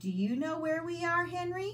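gentle, coaxing tone, very high pitch. Annie leans close to the pteranodon henry and asks him, soft question. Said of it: "she asked softly".

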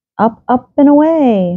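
cheerful, high-pitched, drawn-out rallying cheer. Asked by a moping friend where they're going, he answers, cheering. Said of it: "Mickey cheered".

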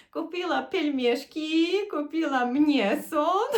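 put-on parody Polish accent, very drawn out and slow. Retelling how a man names the groceries that were bought: parodying Polish speech. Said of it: "він так смішно пародіює саме польську мову".

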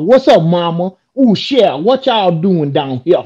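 heavy, put-on Louisiana Cajun accent. Describing a movie scene to friends, imitating Steven Seagal: fake Cajun accent. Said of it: "he had a fake Cajun accent, and he's like".

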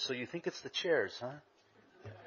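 soft, slow, unhurried half-whisper. Retelling words the Lord whispered while putting up chairs: imitating a whisper. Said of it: "he just kinda whispered to".

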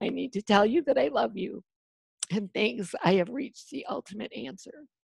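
choked-up voice catching with emotion. Addressing a listener directly, choking up. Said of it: "sorry for my choking up".

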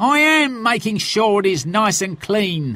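irritated, fed-up tone. Told again to wash out the barrel properly, he replies, cross. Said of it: "He sighed crossly".

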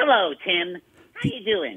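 swooping, swinging cartoon superhero voice. Bringing Larry Boy over to greet Tim, answering in Larry Boy voice. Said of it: "your voice got".

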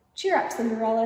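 ordinary talk

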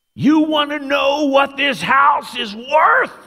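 high, slow, loud shout. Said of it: "And he yells".

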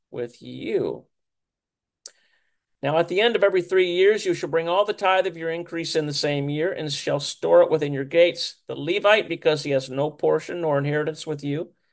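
ordinary delivery

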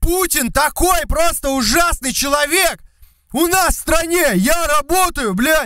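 very high, shrill, drawn-out, full-on crazed shouting. Acting out the yelling guys whose content McLeod loves: yelling like crazy. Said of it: "чуваков, которые орут прям пиздец просто".

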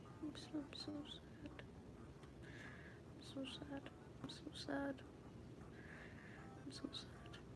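soft whispered sad moan.

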